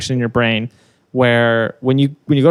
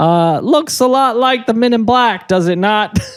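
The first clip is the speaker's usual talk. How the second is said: very high-pitched put-on Brooklyn accent, male voice; 10 semitones higher than usual. Answering the other speaker's question about aliens in a Brooklyn guy voice. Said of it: "Like you're some Brooklyn guy".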